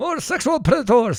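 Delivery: put-on mixed Chechen and Brazilian accent. Reacting to a video clip, imitating Uzbek or Chechen mixed with Brazilian accent. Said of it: "combination of an Uzbek, uh, or a Chechen".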